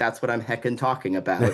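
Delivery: normal talking voice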